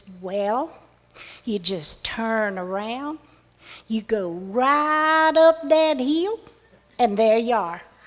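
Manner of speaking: put-on West Virginia accent, drawn-out right. Quoting a man's directions to the travellers, imitating his West Virginia accent. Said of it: "in his West Virginia accent".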